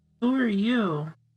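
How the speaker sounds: weedy little voice. Voicing a character shrinking back into a chair, in a weedy little voice. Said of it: "in a kind of uh, weedy little voice".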